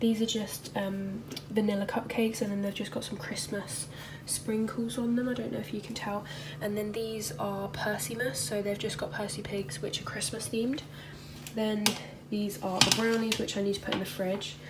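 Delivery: soft whisper. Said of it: "sorry if I'm whispering".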